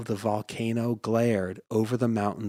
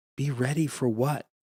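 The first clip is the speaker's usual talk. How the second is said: scared, fearful, frightened voice; 3 semitones higher than usual. Reading a story aloud, a boy asks his father: frightened voice. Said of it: "in a frightened voice".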